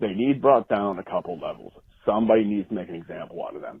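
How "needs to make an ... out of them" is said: normal talking voice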